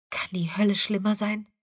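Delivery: softly murmured. Christina, watching the battle through sheets of rain, murmuring. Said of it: "murmelte Christina".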